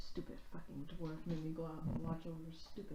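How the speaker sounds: disgruntled, irritated grumbling mutter under the breath. A player voicing their character, sent out to keep watch, muttering under breath. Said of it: "mutter under my breath".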